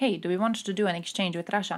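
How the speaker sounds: usual speaking voice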